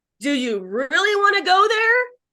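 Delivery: high, sarcastic, cutting tone.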